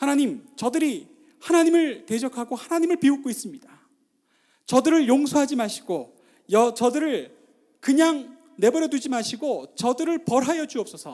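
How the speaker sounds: loud, high, forceful crying out.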